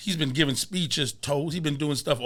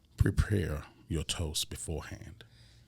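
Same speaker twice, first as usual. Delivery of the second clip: breathy, hushed, refined, classy put-on voice; 10 semitones lower, 7 dB quieter than usual. Giving the first toasting tip in a put-on classy voice. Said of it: "I'm gonna do it in my classy voice now".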